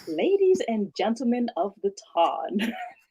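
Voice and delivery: put-on announcing narrator voice. Giving a requested sneak peek of a Lady Whistledown voice. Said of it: "talk like I'm Lady Whistledown".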